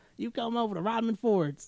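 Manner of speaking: high-pitched car commercial voice. Acting out a line from a fake car commercial: voice like Chris Tucker. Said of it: "Sound like Chris, Chris Tucker".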